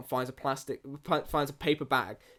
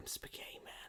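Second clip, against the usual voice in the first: close, breathy, hushed whisper. Retelling a movie scene where a character speaks into an ear: imitating a whisper. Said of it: "whispers in the ear".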